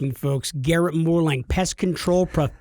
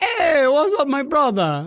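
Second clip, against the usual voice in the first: put-on Jamaican accent, very high and swooping; 10 semitones higher than usual. Mocking the other speaker's attempted russian accent, in a jamaican taxi driver accent. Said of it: "like a Jamaican taxi cab driver".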